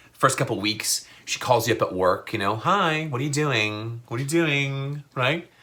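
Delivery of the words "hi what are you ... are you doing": playful, teasing tone. Imitating a girlfriend calling at work: imitating a woman being playful. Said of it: "Still playful".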